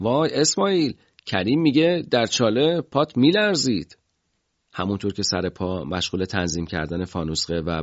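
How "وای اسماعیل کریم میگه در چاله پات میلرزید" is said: loud, high, teasing shout through laughter. Recalling teasing a comrade who jumped into a pit, retelling a loud laughing shout. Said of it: "با خنده و صدای بلند گفتم".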